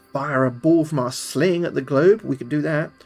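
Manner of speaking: ordinary delivery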